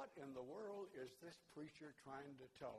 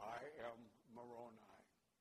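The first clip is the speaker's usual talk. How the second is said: put-on evil, sinister voice, lower; 5 semitones lower than usual. Retelling what the voice that came out of a man said, in an evil voice. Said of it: "that really evil voice".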